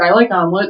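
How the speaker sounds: plain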